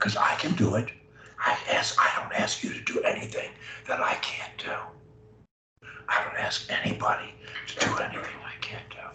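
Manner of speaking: hushed whisper. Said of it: "I'm gonna whisper to you".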